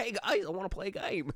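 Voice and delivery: bright, very high, cheerful, playful voice. Demonstrating to co-hosts a version of the line that sounds fun. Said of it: "would be more willing to play if it sounded fun".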